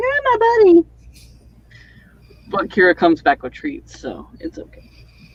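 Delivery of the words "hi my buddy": very high, squeaky, whining dog voice. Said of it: "so she's like".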